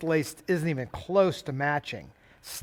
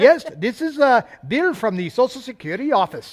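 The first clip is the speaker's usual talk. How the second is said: slow, raised-volume put-on Indian accent; 8 semitones higher, 7 dB louder than usual. Imitating phone scammers who claim to call from Social Security: put-on Indian accent. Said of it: "Except they talk with an Indian accent".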